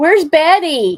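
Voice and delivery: high-pitched, very loud shout. Calling out for the cat Betty: yelling. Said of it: "Sorry for yelling".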